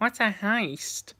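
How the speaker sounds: put-on squeaky, high little-kid voice. Retelling asking fellow online gamers a question as a kid, in a squeaky childhood voice. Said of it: "in my squeaky voice at the time".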